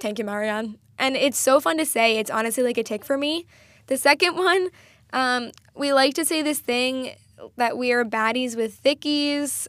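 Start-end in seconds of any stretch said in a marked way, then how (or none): 0.0-0.8 put-on butchered Irish accent, lower. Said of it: "she would just go".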